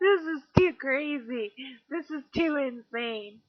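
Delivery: high, strained, exasperated, overwhelmed outburst. Retelling how overwhelming coincidences felt back then, imitating own past screaming. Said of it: "I would literally scream out loud".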